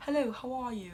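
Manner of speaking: put-on showy British accent. Retelling a friend's joke about people waking up: imitating a British accent. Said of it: "He was doing a British accent".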